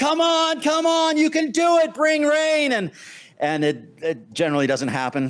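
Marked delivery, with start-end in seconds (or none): 0.0-2.7 very high, howled shout. Retelling calling out to clouds in the desert for rain: imitating own howling shout. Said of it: "pounding my chest and howling and going".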